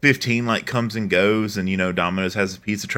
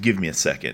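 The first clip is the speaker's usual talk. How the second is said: put-on panicked voice, lower; 4 semitones lower, 4 dB quieter than usual. Retelling a phone call about a late pizza: imitating a panicking employee. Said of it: "you can hear in his voice, he is visibly panicking".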